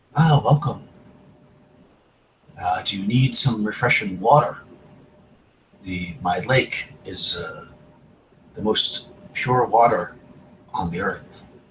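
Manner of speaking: very soft voice. Voicing the maiden as the listeners approach her, in a very soft voice. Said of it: "she speaks to you in kind of a very soft voice".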